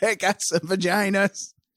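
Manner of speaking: Wisconsin-accented speech. Speaker trying out a Wisconsin accent again, Wisconsin accent. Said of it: "that's a Wisconsin accent".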